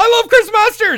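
very high, very loud, shrill shout. Retelling a brother shouting from a quiet crowd: imitating a loud fan shout. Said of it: "like, really loud".

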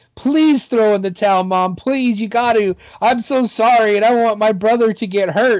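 mock sobbing, high, tearful, crying, pleading voice. Retelling a wrestler begging his mom to throw in the towel: imitating Owen Hart begging and crying. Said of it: "begging his mom, crying".

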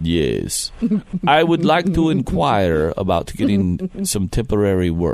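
very deep, low vampire voice. Prank-calling an agency to ask about a blood bank job, talking like a vampire. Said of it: "kind of talk like a vampire".

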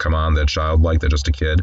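ordinary delivery

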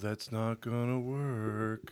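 slow depressing drone, stretched long. Recalling Winnie the Pooh characters, the speaker mimics Eeyore: put-on gloomy Eeyore voice. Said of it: "he had a depressing voice".

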